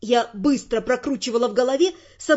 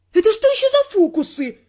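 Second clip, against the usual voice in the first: snapped out, high, angry barking voice; 7 semitones higher, 4 dB louder than usual. Jolted up by a kiss, the narrator barks at Teo. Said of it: "рявкнула я".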